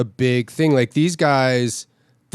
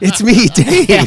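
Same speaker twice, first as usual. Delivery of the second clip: put-on small child voice, higher and louder; 7 semitones higher, 6 dB louder than usual. Retelling an overheard line by a four-year-old son: imitating four-year-old son. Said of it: "a four-year-old going".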